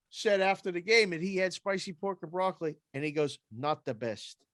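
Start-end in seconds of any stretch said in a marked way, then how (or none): 3.5-4.3 put-on Quebec French accent. Quote the French Canadian goalie's remark after the game, in Louis Domingue's French accent. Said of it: "Not the best with the French accent".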